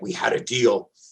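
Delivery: mock annoyed, angry put-on voice. Retelling a movie scene where the symbiote gets mad: imitating the angry symbiote. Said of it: "the symbiote is getting mad".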